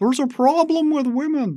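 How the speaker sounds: put-on very high-pitched Canadian accent. Imitating how a public figure says a line: Jordan Peterson impression. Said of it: "the Canadian accent, the way he says".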